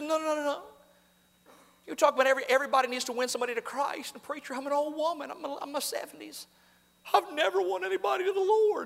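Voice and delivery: high, boo-hooing, sobbing, pleading crying voice. Retelling an old woman's sobbing reply after the service: imitating someone sobbing. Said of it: "she just boo-hooing and crying".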